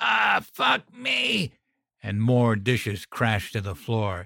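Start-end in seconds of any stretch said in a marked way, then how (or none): 0.0-1.5 very high, ragged, raspy screech. Blinded and stumbling to the kitchen sink, a man screeches. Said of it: "He screeched".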